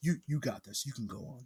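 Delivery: gentle, breathy, barely voiced, very soft murmur. Retelling how a father really spoke: imitating his dad's soft-spoken voice. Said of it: "That's how he really said it".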